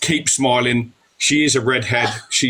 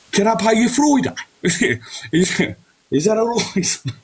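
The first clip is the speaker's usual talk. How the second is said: put-on Birmingham accent, higher pitch; 10 semitones higher than usual. Asked to do a Brummie accent, joking: put-on Brummie accent. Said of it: "People want you to do Brummy".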